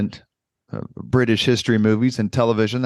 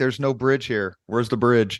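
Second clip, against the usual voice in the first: ordinary talk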